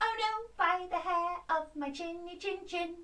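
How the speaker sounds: squeaky little piggy voice. Leading a storytelling exercise, modelling the squeaky little pig voice. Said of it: "you need your squeaky voice to go".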